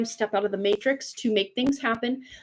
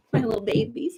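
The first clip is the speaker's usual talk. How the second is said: voice used for talking to pets. The speaker greets their dogs in a talking-to-my-dog voice. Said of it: "my talking to my dog's voice".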